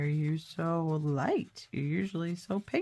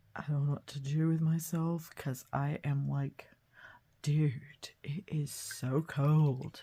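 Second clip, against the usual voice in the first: put-on talking hornet character voice; 2 semitones lower than usual. Giving lazy early hornets a voice for fun: voicing a hornet. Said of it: "I love giving things a voice".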